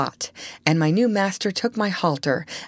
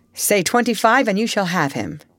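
plain

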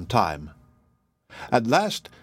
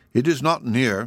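ordinary delivery

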